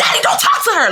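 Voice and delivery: very high, shrill, dramatic screaming, acted out. Retelling own past argument, telling a dad to stay out: retelling own scream. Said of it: "I was screaming".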